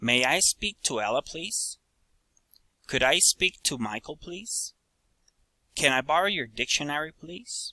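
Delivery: rising intonation on "please". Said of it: "Requests, rising intonation".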